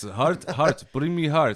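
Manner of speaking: loud, high-pitched put-on Russian accent. Retelling what a guy demanded of him, in the guy's Russian accent. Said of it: "in his awesome Russian accent".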